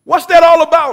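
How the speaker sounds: full-throated, shrill, booming scream. A driver pins the kid who threw a brick at his car, screaming. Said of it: "he screamed".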